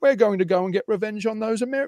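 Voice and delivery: English-sounding British accent.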